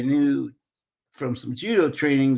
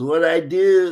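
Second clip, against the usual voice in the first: put-on loud, heavy, laid-on-thick Brazilian accent; 4 semitones higher, 5 dB louder than usual. Retelling what a man who had just come to America said, thick Brazilian accent. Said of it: "he says a really thick Brazilian accent".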